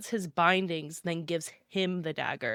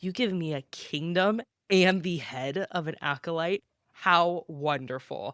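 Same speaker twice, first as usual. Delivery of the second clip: plain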